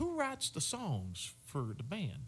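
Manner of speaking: put-on Northern Louisiana accent. Retelling meeting a Grammy winner who questions the band, Northern Louisiana accent. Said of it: "he's got this Northern Louisiana accent".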